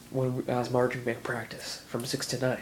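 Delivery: normal talking voice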